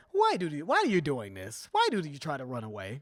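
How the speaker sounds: lilting, falsely sweet, mocking sing-song tone. Speaker acting out how he speaks, imitating a taunting but nice voice. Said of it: "this sort of um taunting but like nice voice".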